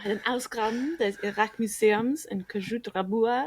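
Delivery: weird accent reading German. Reading a german title aloud after living in germany a year, weird accent. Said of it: "I'm getting into a weird accent there".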